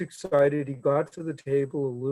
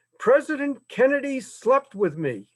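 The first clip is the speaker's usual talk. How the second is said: thick Irish brogue, very high-pitched and loud; 10 semitones higher, 5 dB louder than usual. Retelling an elderly caller's first words to a bookshop clerk, thick Irish brogue. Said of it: "thick Irish brogue".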